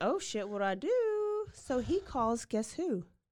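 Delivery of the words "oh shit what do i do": panicked, frantic blurt, very high-pitched. Retelling what the fifteen-year-old said after the killings: imitating panic. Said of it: "he's, like, panicking, and he's like".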